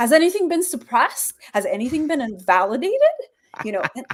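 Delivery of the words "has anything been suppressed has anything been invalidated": pitch lifting at the end of each phrase. Showing how auditor drills changed the way they talked, imitating auditor questioning tone. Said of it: "I start talking like that in real life".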